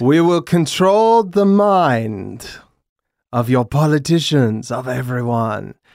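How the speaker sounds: wildly shifting bad fake Russian accent, drawn out. Joking about the new Indiana Jones film, in a bad Russian accent. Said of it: "with my bad Russian accent that changes wildly".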